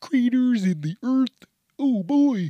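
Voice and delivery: very high, loud, drawn-out cartoon voice. Redoing an odd-sounding line on purpose: failed Kermit the Frog voice. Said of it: "Sound like, uh, Kermit the Frog".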